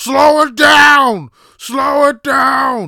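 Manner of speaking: very loud, very slow, shrill, drawn-out bellow. Retelling a bus passenger yelling at the driver: imitating someone yelling. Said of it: "take a shit in the back and yell".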